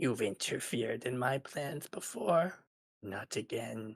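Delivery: very hushed, awful, menacing monster voice. The game narrator voices a tree reaching down for two characters, awful tree-monster voice. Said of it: "you hear it in this awful voice".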